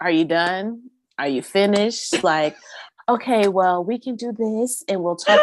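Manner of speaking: mock flat monotone. Describing an argument and acting out the other person, mimicking a flat monotone. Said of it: "that same monotone voice".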